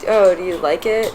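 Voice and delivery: normal talking voice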